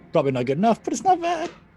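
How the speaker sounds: pitch rising at the end on "bad". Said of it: "my voice went up there at the end".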